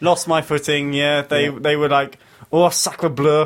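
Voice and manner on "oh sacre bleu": bad, appalling put-on French accent. Retelling how the French reacted after losing footing on a mountain path; bad French accent. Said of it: "apologies for that appalling accent".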